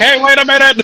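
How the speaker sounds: high, loud call-out. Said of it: "you weren't calling".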